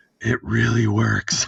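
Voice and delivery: whispered, acting out a whisper. Retelling what was said to other customers at a dealership: retelling a whisper. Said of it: "I just kinda whispered".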